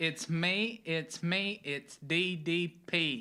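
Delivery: loud, very slow, passionate, boastful delivery with full gusto. Asked to do it again, the speaker does a Diamond Dallas Page impression. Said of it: "You sound just like him. Can you do that again?".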